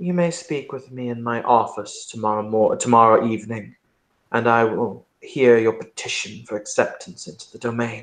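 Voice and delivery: thoughtful, pondering, musing tone. Narrator voicing the prince replying to a Toreador's petition, musing. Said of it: "and he will muse".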